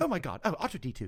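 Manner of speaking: breezy, bright, light and poppy droid voice. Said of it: "you want that kind of lightness to it".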